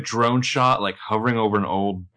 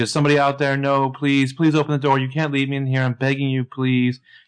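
mock panicked, frantic voice, higher; 5 semitones higher than usual. Retelling a trapped character freaking out: imitating a panicked plea. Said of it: "she's freaking out, and she's like".

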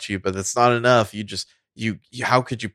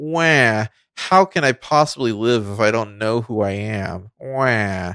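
put-on whiny, moping, slow, drawn-out whine. Mocking a movie character who whines through the whole film: imitating a whiny character. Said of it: "He just whines through the whole fucking movie".

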